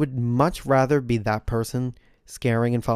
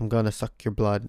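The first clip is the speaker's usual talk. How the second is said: horrible, bad put-on vampire voice. Explaining why being a vampire would be more fun, doing a horrible vampire impersonation. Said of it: "That was such a horrible vampire impersonation".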